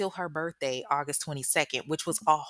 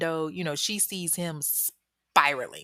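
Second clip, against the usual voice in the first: ordinary delivery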